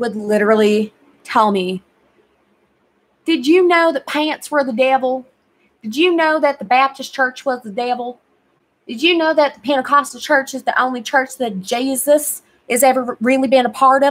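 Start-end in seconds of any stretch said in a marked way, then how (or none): 3.3-14.1 put-on heavy, laid-on Alabama accent. Quoting the speaker's grandma from Alabama, thick Alabama accent. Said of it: "she has the thickest Bama accent".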